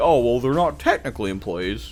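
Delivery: playfully mocking, goofy, dorky, teasing delivery. Quoting a creator's kinder take on playtesters, in a mocking imitation of Osmic Tactics. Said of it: "I know I'm being kinda mocking here".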